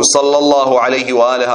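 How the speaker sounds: ordinary delivery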